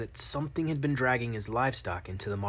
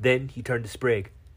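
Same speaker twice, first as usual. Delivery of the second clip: usual speaking voice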